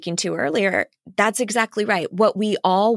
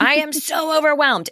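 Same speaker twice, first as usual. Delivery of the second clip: loud, high-pitched, outgoing, gregarious exclamation; 7 semitones higher than usual. Speaker demonstrates how they tell everyone they are overwhelmed, gregarious and loud. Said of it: "it will be gregarious and loud".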